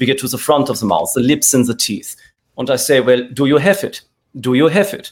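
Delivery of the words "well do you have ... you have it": put-on German accent. Actor demonstrating moving voice placement forward to sound german: german accent. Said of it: "now I'm sounding German".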